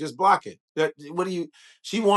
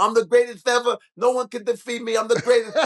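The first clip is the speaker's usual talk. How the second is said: put-on young heavyweight boxer's bragging voice, pitched up high; 7 semitones higher, 3 dB louder than usual. Showing the younger version of a fighter before turning to him now, in a young Mike Tyson voice. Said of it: "that's young Mike Tyson".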